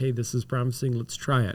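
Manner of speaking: ordinary talk, nothing marked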